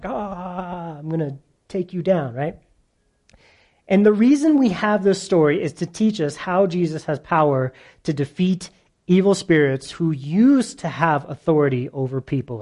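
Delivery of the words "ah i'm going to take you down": towering brute's battle cry, drawn-out Ah. Acting out the possessed man rushing from the tombs: King Kong voice. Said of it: "like King Kong".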